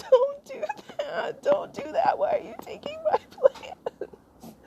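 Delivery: play-acted tearful pleading through sobs. Retelling bursting into tears at someone pulling up plants: imitating her own crying plea. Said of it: "I just burst into tears".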